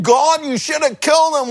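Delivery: sour, high, grouchy grumbling groan. Retelling him sitting on the side complaining to God, mock groaning. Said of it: "he's groaning".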